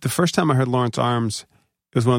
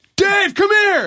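put-on scream, higher and louder; 5 dB louder than usual. Retelling how an interviewer called a star over: imitating someone screaming. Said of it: "And just starts screaming it".

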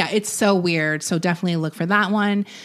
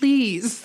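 play-acted mournful, plaintive pleading voice; 3 semitones higher than usual. Retelling how Captain Lou ends an anti-drug message: imitating Captain Lou's plaintive plea. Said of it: "he does it with a plaintive".

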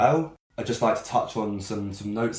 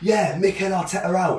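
put-on dry, ironic, pitched-up sarcastic tone; 10 semitones higher, 4 dB louder than usual. Retelling a mate's reply in the toilets, imitating a sarcastic remark. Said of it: "in a sort of sarcastic way".

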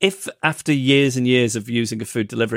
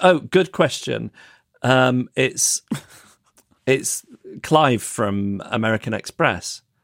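ordinary delivery

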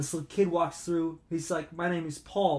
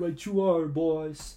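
slow tough-guy enforcer voice. Repeating Mikey's reply after naming it an impression: impression of Mikey. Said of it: "That's my impression of him".

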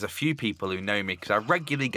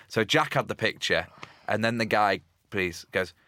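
ordinary talk, nothing marked

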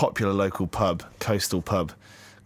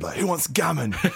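big, hearty, high, booming bellow; 7 semitones higher than usual. Retelling how someone brought gammon into the room, re-enacting a bellow. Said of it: "just kind of bellowed".

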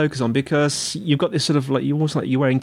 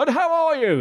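very high congested stuffed-up radio-host voice; 12 semitones higher than usual. Show host telling his guest how he greets people, in a stuffed-up radio voice. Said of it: "I get my sort of stuffed up radio voice on and go".

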